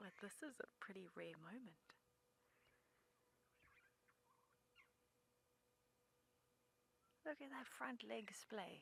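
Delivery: very soft, quiet, held-down hushed voice. Describing a drinking giraffe while trying not to startle it: keeping voice down. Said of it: "I'm keeping my voice down".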